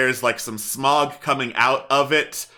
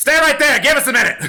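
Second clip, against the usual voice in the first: very high, loud kobold creature voice shouting; 13 semitones higher, 6 dB louder than usual. The game master voices a kobold yelling back through an arrow slit: kobold yelling back. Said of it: "one of them yells back".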